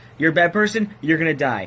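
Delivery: plain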